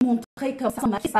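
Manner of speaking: plain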